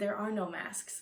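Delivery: mock muttering under breath. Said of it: "underneath my breath I was like".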